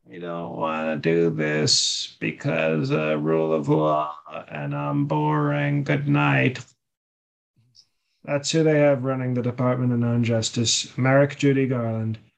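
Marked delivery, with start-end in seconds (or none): 0.2-6.7 put-on slow, drawn-out, creaky old-person voice. Mimicking what he'll say about the charges: Sleepy Joe old-person voice. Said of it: "he'll say in his old person voice".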